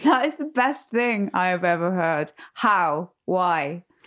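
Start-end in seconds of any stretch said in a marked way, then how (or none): 0.0-2.3 giggling, delighted laughter through the words. Reacting to hearing about wine tasting lessons at school, laughing while talking. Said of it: "I'm sorry, I'm laughing".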